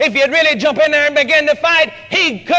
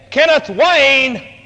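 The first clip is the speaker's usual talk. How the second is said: put-on commanding voice of authority. Retelling a mother's stern call of a child's full name: imitating mom's voice of authority. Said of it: "The authority that was in the voice".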